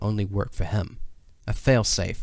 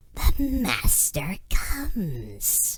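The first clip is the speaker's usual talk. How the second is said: hoarse, raspy whisper, much higher; 10 semitones higher than usual. Reading a story aloud, the narrator voices a woman in a cell: hoarse whisper. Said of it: "she whispered hoarsely".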